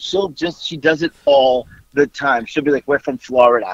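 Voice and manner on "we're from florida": put-on New York accent. Imitating their mom, who does this all the time, in a new york accent. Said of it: "she says it in the New York accent she has".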